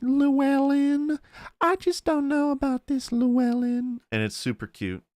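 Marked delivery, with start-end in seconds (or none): 0.0-4.0 small, very high, worried, fretful southern voice. Imitating the wife character saying her husband's name, Kelly Macdonald's mock-concerned southern voice. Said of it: "this concerned kind of voice".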